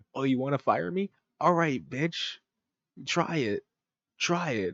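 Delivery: defiant, taunting delivery.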